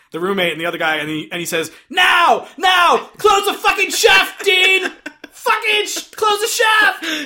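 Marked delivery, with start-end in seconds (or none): 1.9-7.2 very high, shrill, loud frantic screaming. Retelling a movie scene where the roommate yells at Dean: imitating a screaming roommate. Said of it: "And he's, like, screaming".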